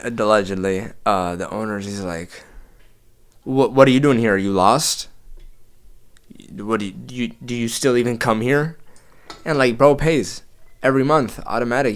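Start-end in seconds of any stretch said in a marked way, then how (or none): 3.4-8.8 play-acted hostile, aggressive barking voice. Retelling the gym owner confronting a paying member: imitating aggressive barking. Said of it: "bark that at you aggressively".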